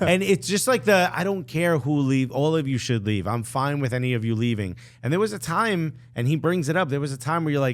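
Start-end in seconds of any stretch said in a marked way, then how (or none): none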